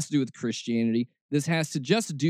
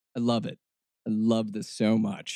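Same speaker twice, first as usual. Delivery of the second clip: sarcastic, mocking, lower pitch; 7 semitones lower than usual. Reacting to a preacher's clip about giving money: sarcastic. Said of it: "I mean that in the most sarcastic way possible".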